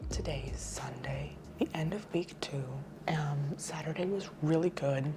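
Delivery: soft, hushed whisper. Recording early Sunday morning at the end of week two; whispering. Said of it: "I know I'm whispering".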